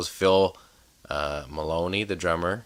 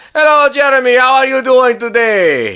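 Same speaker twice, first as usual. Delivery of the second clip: put-on very high, very loud, shrill old Italian accent; 15 dB louder than usual. Retelling how a man greeted him when playing golf, imitating an old Italian man. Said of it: "He's a wonderful old Italian guy".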